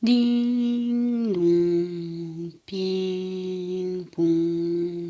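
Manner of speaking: very slow, with long, stretched i and o. Showing lengthened vowels in ding dong ping pong: long drawn-out i and o vowels. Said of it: "vous allongez le i ou le o".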